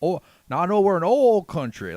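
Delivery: put-on oil in a Texan accent, very high, loud. Quote how he says it to show his way of speaking, imitating his soothing-to-Texans pronunciation of oil. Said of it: "he has that pronunciation of oil that is very soothing to people from Texas".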